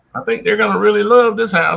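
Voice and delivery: high, sarcastic delivery. Rereading a letter writer's line about a sold house: imitating a sarcastic remark. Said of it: "there's sarcasm in that".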